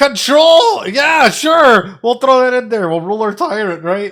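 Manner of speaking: very loud, very high-pitched yelling. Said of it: "I'm yelling at you guys".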